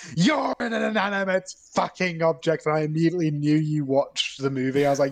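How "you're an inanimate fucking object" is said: acted, high, screamed outburst. Retelling how the other speaker came in after the movie: imitating someone screaming. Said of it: "you just screamed at me".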